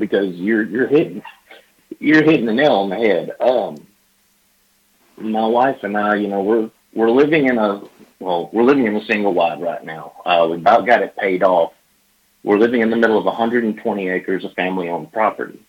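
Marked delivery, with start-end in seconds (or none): 0.6-10.1 choked-up voice catching with emotion. Talking about where he and his wife live now, a little choked up. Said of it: "I'm a little choked up".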